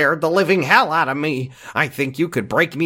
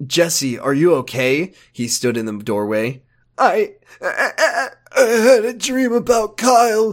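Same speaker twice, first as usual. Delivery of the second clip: sad, mopey, droopy voice, slow; 3 semitones higher than usual. Showing the other speaker a voice he does, in sad Ricky voice. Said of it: "This is my sad Ricky voice".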